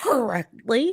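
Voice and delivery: dry, sarcastic air-quote tone on correctly. Repeating the word she put in air quotes: sarcastic "correctly". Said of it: "I thought I made my sarcastic voice".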